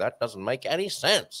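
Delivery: rough, shaky, not very good put-on American accent. Saying a phrase the Ben Shapiro way, in a Ben Shapiro American accent. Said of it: "in the Ben Shapiro kind of way ... another one of my American accents that probably wasn't very good".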